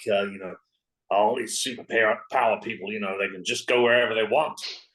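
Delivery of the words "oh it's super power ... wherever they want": muttered quietly to oneself. Voicing a character who complains about super-powered people: muttering under breath. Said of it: "under my breath I'll mutter something like".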